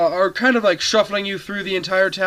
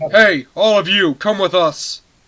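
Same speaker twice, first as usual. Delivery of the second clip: severe, very harsh, hard-edged voice; 4 dB louder than usual. Describing fairy-like beings, the game narrator voices their order in a very harsh voice. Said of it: "in a very harsh voice".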